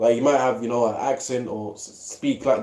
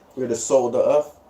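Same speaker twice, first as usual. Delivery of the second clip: ordinary talk, nothing marked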